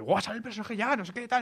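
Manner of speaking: high-pitched, thrilled burst of excitement. Recalling when they thought the character was about to come out, the speaker reenacts their excitement. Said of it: "estaba muy emocionado".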